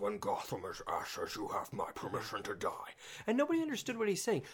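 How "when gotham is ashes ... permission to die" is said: dark, gravelly voice full of gravel. Imitating the villain from the original trailer, gravelly, dark Bane voice. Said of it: "he had a much more gravel, darker voice".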